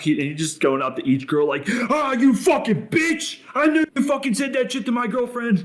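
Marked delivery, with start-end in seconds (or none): 1.7-5.7 put-on very high-pitched, shrill, enraged furious screech. Retelling a wedding fight story, imitating someone screaming angrily. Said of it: "screaming in all these girls' faces".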